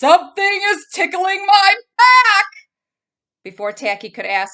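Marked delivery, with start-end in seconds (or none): 0.0-2.5 thunderous booming elephant voice, very high, very loud. Reading a story aloud, the rock speaking: booming voice.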